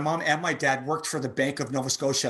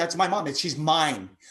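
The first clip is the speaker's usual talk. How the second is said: plain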